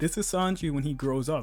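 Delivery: normal talking voice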